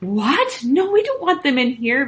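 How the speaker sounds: sudden, exclaimed, objecting outburst. Narrator reads Bunny answering Tim about letting the gorillas in: exclaiming. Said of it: "Bunny exclaimed".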